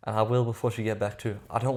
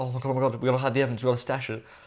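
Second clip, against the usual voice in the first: mock-panicked, stressed voice. Reacting to messages, acting out a woman afraid of getting caught; imitating someone stressing out. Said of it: "She's stressing like".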